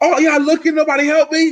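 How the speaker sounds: livid, furious, very high-pitched shouting. After being robbed, re-enacting yelling at the onlookers: retelling a furious yell. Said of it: "I'm yelling at these people now".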